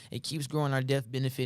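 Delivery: ordinary talk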